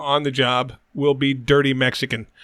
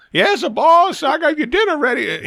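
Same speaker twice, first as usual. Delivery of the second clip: put-on old servant dialect, much higher, slower; 12 semitones higher than usual.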